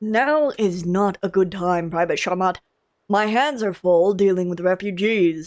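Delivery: rough, gruff, deep, low masculine register. Voice actor reading a character's line to Private Sharmat, gruff lower man voice. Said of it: "my gruff lower man voice".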